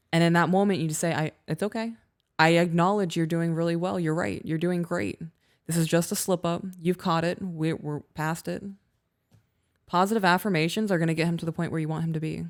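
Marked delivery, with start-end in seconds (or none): none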